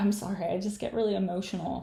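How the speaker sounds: put-on crying, tearful voice. Retelling how a man started crying and apologized: imitating someone crying. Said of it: "And he starts crying".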